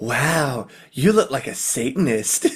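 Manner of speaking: airy, breathy woman's radio voiceover voice. Recalling a memorable V Rock radio ad, the speaker quotes its line: breathy female voice. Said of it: "breathy female voice goes".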